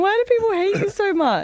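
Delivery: high-pitched, tearful, pleading wail.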